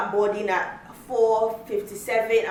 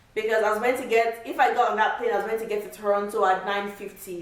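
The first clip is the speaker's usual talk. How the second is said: ordinary talk, nothing marked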